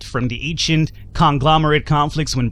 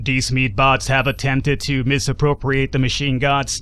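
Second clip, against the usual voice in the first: put-on flat, monotone mechanical robot voice. Narrating a story, voicing rogue AI units: robotic voice. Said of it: "let's do my uh, robotic voice here".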